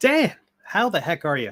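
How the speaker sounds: astonished, surprised, hearty voice. Greeting another speaker who has just said good morning: surprised. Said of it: "you sound surprised to see me".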